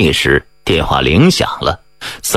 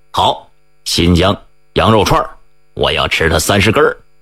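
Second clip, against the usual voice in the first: plain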